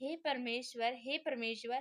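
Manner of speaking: usual speaking voice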